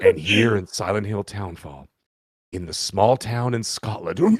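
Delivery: moody, atmospheric documentary narrator voice. Retelling how a man tried to sound atmospheric while talking, mock-atmospheric narration. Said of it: "trying to be like all atmospheric".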